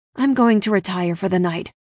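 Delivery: plain reading voice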